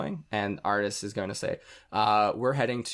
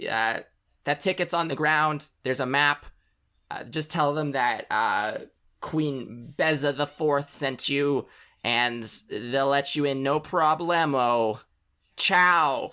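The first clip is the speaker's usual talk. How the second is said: high-pitched, slow bee character voice; 5 semitones higher, 4 dB louder than usual. Voicing the bee receiving the honey: bee character voice. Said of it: "grabs it and goes".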